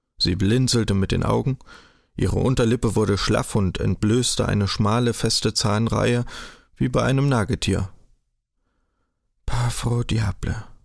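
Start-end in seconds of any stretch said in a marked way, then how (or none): 9.5-10.6 murmuring under the breath, low. Narrator reading Frau Behold as she takes Kaspar's hand, murmuring. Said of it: "murmelte sie".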